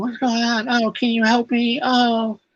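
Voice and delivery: very high, slow, drawn-out whine. Retelling a scene, acting out a character asking for help: whiny Volcana voice. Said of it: "she's whiny. She's a little whiny".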